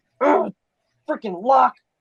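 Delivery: very high-pitched, rough, gruff orc voice. Game master voices a half-orc slamming at a door, gruff half-orc voice. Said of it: "a gruff half orc voice be like".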